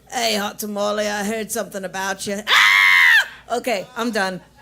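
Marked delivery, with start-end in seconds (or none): 0.1-2.4 poor put-on Australian accent. Joking about a celebrity showing up: bad Hugh Jackman accent. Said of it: "I know that was a really bad accent".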